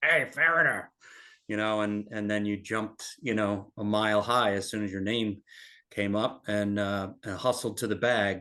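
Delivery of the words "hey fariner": raspy, pitched-up calling voice. Former caddie recalls waiting in the caddy yard to be called: imitating Gene's raspy voice. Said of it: "Gene's raspy voice".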